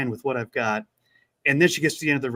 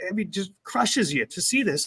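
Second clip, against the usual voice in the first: ordinary talk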